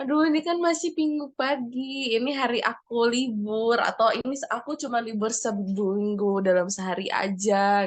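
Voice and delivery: plain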